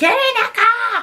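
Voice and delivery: loud scream. Retelling mum screaming from the car to come: imitating mum screaming. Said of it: "my mum would be screaming at me".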